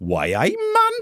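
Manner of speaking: high-pitched put-on Geordie accent. Introducing a story to Ems on the show, in a mock Geordie accent. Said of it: "I'm very good at doing your accent".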